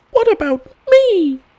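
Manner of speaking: very high, squeaky, small little voice. Reading a story where Piglet looks up and asks the author: squeaky Piglet voice. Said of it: "in his squeaky voice".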